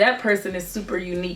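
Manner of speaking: ordinary talk, nothing marked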